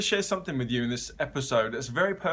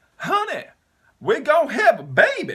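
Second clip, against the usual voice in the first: put-on Southern accent, very high, loud and swooping; 13 semitones higher, 8 dB louder than usual. Retelling how the wife announced a pregnancy, the speaker voices her in a best southern accent. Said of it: "That's my best Southern accent right there".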